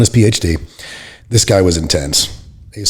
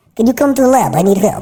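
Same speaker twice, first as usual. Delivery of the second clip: very high-pitched put-on voice; 13 semitones higher than usual. Retelling how a guy called him over to the lab, imitating his high-pitched voice. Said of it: "he had a really high pitched voice".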